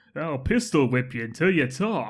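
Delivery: put-on New York accent. Quoting one hoodlum's single line, in his New York accent. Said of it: "he's got his New York accent. He's like".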